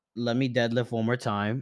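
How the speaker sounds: ordinary talk, nothing marked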